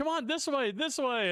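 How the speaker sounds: high, urgent mock voice.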